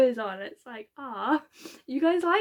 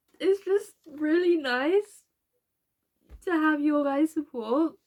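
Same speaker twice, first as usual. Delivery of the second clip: tearful voice, higher; 4 semitones higher than usual. Thanking viewers for their support on the channel, crying while talking. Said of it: "I didn't think I was going to cry this much".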